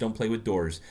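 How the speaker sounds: plain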